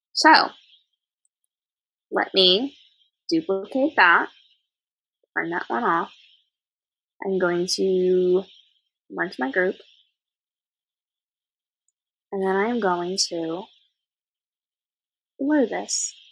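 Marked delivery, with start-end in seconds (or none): 2.1-16.2 suddenly very quiet, low volume, much slower pace. Walking viewers through editing steps after talking all morning: got really quiet. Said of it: "I just realized I got really quiet".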